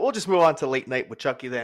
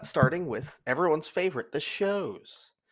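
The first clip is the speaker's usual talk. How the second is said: faintly mocking, tongue-in-cheek tone; 3 semitones higher, 5 dB quieter than usual. Introducing the next discussion topic, the shows: almost mocking tone. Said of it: "I said that almost mockingly".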